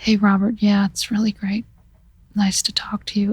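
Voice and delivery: quiet, flat delivery. Retelling answering a phone call while trying not to wake a son: quiet, flat delivery. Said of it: "[quietly, flatly]".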